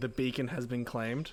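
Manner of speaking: ordinary talk, nothing marked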